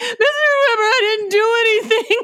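high, drawn-out, teary voice on the verge of crying. Retelling how Barry came out and spoke to Mr. Weber, imitating Barry almost in tears. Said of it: "Barry comes out like he's almost in tears".

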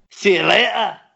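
Scottish accent, loud and high-pitched.

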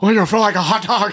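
loud, high ballpark announcer voice. Joking about a Cubs announcer, doing a Harry Caray voice. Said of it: "Harry Ca-".

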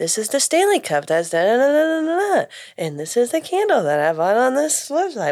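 uptalk, pitch rising high on "Cup" and "website". Mocking how girls in online product reviews talk, imitating uptalk. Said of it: "every sentence ends on a high note".

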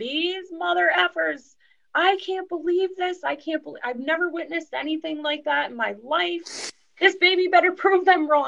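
mock, high-pitched screaming rant. Retelling a friend walking up New Scotland Avenue: imitating her screaming. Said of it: "she was walking up New Scotland Avenue screaming".

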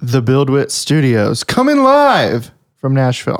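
attempted swooping radio DJ announcer delivery. A host introducing the show's live episode, trying out a radio announcer voice. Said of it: "Trying to get like a radio voice down".

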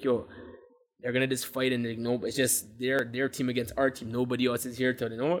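normal talking voice

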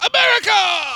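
very high-pitched shrill yelling. Imitating Rudy Giuliani yelling a single word: yelling America as Rudy Giuliani. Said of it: "That's how he sounds".

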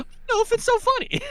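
high, fast, uneasy put-on voice.

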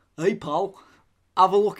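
put-on Hull accent. Retelling what a man from up north said, imitating a Hull accent. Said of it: "How up north are we talking?".

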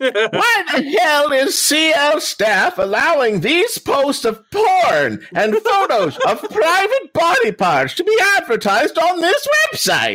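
put-on very high, prim, scandalized pearl-clutching old lady voice. Speaker reading a complaint post aloud, doing a pearl-clutching old lady voice. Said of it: "my best uh, pearl clutching old lady".

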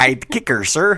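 a little Chicago accent. Repeating a quoted movie line, trying it a bit differently; slight chicago accent. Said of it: "That was a little more Chicagoan".

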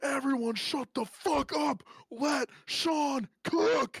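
very high, loud, drawn-out screaming yell. Recalling a fan behind him at a football game, imitating fans screaming. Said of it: "they all started screaming".

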